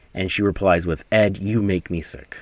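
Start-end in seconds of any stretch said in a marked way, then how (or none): 1.1-2.4 put-on mean tone, much lower. Retelling a woman's reply to Ed in a story, retelling a mean remark. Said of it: "She's very mean".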